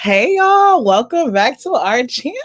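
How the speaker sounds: very loud voice, cracking high. Opening a channel video and greeting viewers, voice cracking. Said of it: "my voice cracked".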